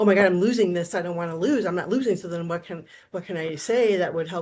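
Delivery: normal talking voice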